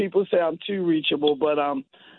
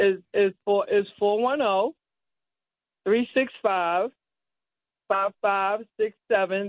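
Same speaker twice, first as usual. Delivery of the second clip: slow, unhurried speech; 3 semitones higher than usual. Repeating a phone number so listeners can write it down, slowly. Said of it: "So do it slowly".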